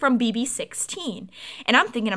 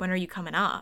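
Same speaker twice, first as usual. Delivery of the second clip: put-on whisper, much quieter; 3 semitones lower, 7 dB quieter than usual. Telling a story, quoting a man who came up and whispered, retelling a whisper. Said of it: "he like whispered".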